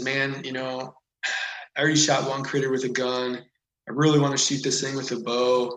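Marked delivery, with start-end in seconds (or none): none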